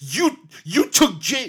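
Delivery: high, loud unhinged shout.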